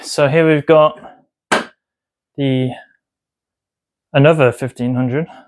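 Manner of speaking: out of breath, winded, with halting broken phrasing. Showing another TV after moving TVs up and downstairs, out of breath. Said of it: "I'm a bit out of breath from moving T Vs".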